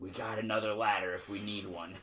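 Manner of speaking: hushed, secretive, confidential half-whisper. Retelling what the sound guy came back and said: imitating someone half-whispering. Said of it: "he whispers to me".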